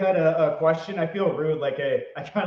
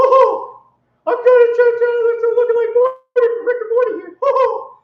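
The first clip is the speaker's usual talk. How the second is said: high, loud squeaky voice; 10 dB louder than usual. Showing a remembered voice impersonation: Mickey Mouse voice. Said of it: "the Mickey Mouse voice".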